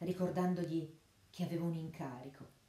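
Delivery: ordinary delivery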